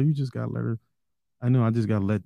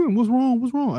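very high, put-on worried child voice; 13 semitones higher than usual. Imitating one kid coming in to check: imitating a kid's fake concern. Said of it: "One come in".

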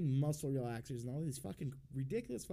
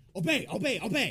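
very loud, high-pitched shrieked scream; 7 semitones higher, 9 dB louder than usual. Recalling a woman who woke the speaker at 6 a.m. daily; retelling a scream. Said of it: "she's just screaming".

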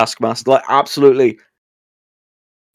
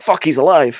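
plain

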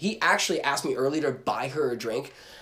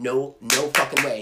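put-on panicked, freaking-out voice; 3 dB louder than usual. Retelling seeing a woman bring over a drink: imitating own freaking out. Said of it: "I'm just, like, freaking out".

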